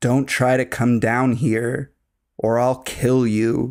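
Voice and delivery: put-on loud whisper. Retelling an intruder's threat from downstairs: imitating a loud whisper. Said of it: "I hear him kind of loudly whisper".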